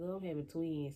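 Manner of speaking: ordinary talk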